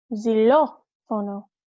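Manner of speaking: rising stress on "lo", second syllable of xylofono. Teaching Spanish accent marks with a word: rising, stressed lo in xylofono. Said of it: "Notice how that accented O, my voice went up, and it's that I accented. I really punched that letter with my voice".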